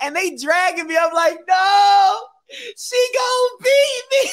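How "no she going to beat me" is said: put-on very high, drawn-out, desperate screaming wail. Retelling being dragged to the precinct in front of mom, reenacting the screaming. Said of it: "I'm screaming at the top of my lungs".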